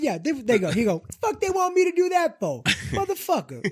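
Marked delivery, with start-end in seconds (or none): 1.2-3.7 very high, swooping, baffled tone, pitch swinging widely. Imitating an actor reacting to a far-fetched script: Samuel L. Jackson impression. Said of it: "That's your Sam Jackson".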